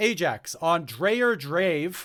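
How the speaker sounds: very slow, careful, deliberate, spelled-out delivery.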